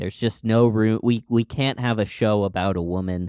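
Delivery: ordinary talk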